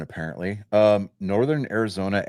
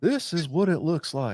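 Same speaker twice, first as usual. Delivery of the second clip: high-pitched, cartoonish voice; 8 semitones higher, 3 dB quieter than usual. Imitating a fan showing his son the stadium: Hank Hill voice. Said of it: "I'm gonna do my Hank Hill here".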